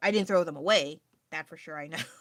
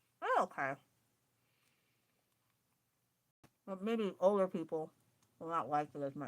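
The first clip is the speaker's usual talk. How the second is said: speaking with mouth full, quieter; 5 dB quieter than usual. Tasting a sweet wafer on a live stream, talking with mouth full. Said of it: "Sorry, I'm talking with my mouth full".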